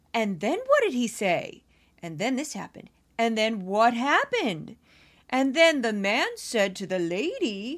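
bedtime storybook reading voice with swooping pitch.

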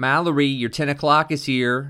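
loud, nasal voice. A woman at a small desk calls out to Mallory; loud, nasal voice. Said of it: "she said in a loud, nasally voice".

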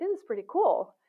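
high, loud, thrilled, delighted exclamation. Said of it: "I'd be like".

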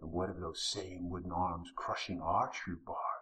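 sneering whisper. Droman answers Mr. Stump's complaint: sneering whisper. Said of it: "Droman sneered in his own whisper".

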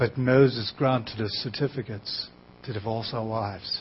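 very low, very soft put-on British accent. Retelling what people argued back, slipping into a put-on British accent. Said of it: "I just slip into that British thing".

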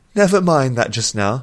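uneasy, nervous, laughing brush-off tone. Nuthea answers Cathuna's question; nervous laugh. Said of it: "and laughed nervously".

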